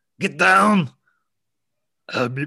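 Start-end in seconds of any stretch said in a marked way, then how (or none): 0.2-0.9 bad, very loud, high yell at full volume. Doing an Arnold Schwarzenegger impression after being asked for one. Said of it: "Do your best Arnold Schwarzenegger".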